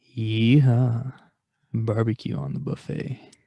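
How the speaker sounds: jokingly sexy voice. A former pizza manager recalls staff mocking the call-out slogans, saying it mock-sexually. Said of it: "say them really sexually".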